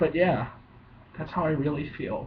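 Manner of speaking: voice catching, choked up with emotion. Closing his seventieth video, speaking to viewers, choked up. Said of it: "I'm getting choked up in front of millions of people".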